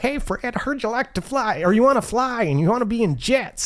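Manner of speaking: put-on Southern-sounding accent put on, pitched way up. Retelling what a man said on a visit to the recruiting district, imitating Mike Durchak. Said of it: "he's talking like he's from like some southern area".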